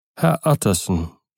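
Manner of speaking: plain reading voice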